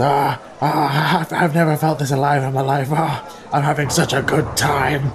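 put-on giddy turning panicky, drunk.

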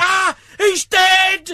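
acted-out alarmed cry. Telling about a football match, acting out a spectator's reaction: imitating an alarmed shout. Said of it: "stood up and went".

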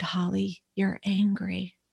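hushed, really quiet, soft-spoken delivery. Retelling what the therapist said: imitating someone speaking quietly. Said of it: "she just really quietly said".

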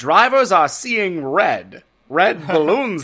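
1920s-style announcer voice. Reporting that I-95 is backed up with balloons, in a Legend of Korra announcer voice. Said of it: "they all suddenly became the announcer".

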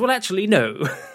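high, loud, awkward know-it-all delivery.

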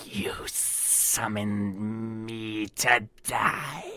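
hissing creature voice. A game master voices a creature answering a player, in a hissing creature voice. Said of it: "In a hissing voice".

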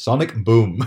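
plain, calm, unhurried announcer delivery, no aggression. Discussing a game voice clip with the other speaker, flat Street Fighter 2 announcer delivery. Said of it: "he just says it exactly like the announcer, with no aggression, with no speed".

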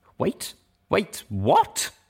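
startled, high, gasped delivery. Narrator reads a character hearing a guard threaten execution; gasping. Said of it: "Velvet Remedy gasped".

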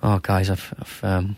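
mock crestfallen, soft, slow, faltering, sad voice. Retelling a comedy bit where Bobby Heenan gets bad news: imitating Bobby Heenan sounding broken and sad. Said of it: "he looks really broken and sad".

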